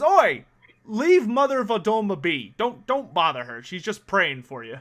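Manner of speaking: annoyed sailor voice. Voicing an annoyed crewman warning a player off: annoyed crewman. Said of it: "gives you an annoyed look".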